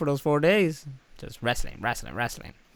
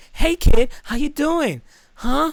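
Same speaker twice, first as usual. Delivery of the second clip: loud, high, rough bad Boston accent; 14 semitones higher, 7 dB louder than usual. As a vendor selling pictures, bad Mark Wahlberg Boston accent. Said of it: "I should be like Mark Wahlberg".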